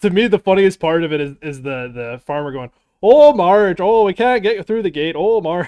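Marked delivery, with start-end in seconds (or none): 3.0-5.7 put-on Minnesota-style Midwest, Canadian-sounding accent. Retelling the funniest part, the farmer calling out to Marge: Midwest-Canadian accent. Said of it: "the fucking like Midwest slash Canadian accent".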